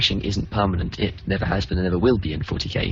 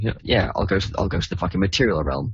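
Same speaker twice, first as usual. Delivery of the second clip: plain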